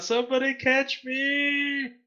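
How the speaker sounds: high, slow, pleading shout. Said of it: "I'm gonna shout out".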